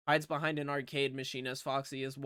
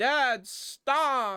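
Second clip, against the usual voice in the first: high, loud cry. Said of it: "As [name] says".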